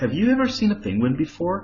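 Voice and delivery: questioning upward pitch rise on "before". Teaching yes-no question intonation, rising tone on 'before'. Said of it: "خدوا بالكم ال rising intonation we always use it with yes no question".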